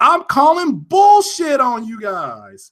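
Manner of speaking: worked-up, swooping, animated ranting outburst. Calling out critics to everyone listening to the show, screaming. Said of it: "I'm sorry, I'm screaming".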